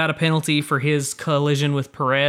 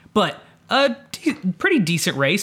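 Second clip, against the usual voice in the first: voice cracking and breaking mid-phrase; 4 semitones higher than usual. Speaker recapping a race, voice cracking. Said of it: "My voice just cracked".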